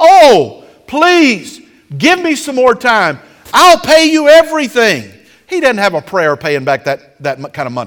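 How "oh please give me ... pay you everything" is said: put-on, drawn-out, desperate pleading, loud, slow, high. Retelling how a debtor begs the one he owes, acting out a man begging. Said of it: "the man begs and says".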